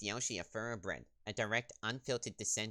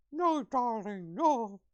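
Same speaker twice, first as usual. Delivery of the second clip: very high, loud voice with lips pursed tight; 13 semitones higher, 9 dB louder than usual. Trying out a voice for a game character: trying a voice with pursed lips. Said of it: "I'm gonna try and purse my lips".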